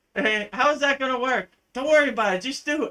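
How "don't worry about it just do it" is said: put-on, playful, joking innocent tone. Retelling the exchange about making a Kriya Yoga school the way he always says it, imitating playful innocence. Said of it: "says with like innocence".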